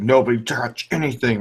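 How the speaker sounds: panicky, freaked-out voice. Retelling a dad's reaction to a prank fake ice cube, imitating dad freaking out. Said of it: "freaked out and made us all put our cups down".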